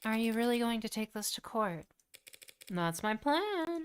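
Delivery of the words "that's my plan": voice cracking, much higher, slower. Answering whether they will really take this to court, voice cracking. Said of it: "Sorry for the voice crack".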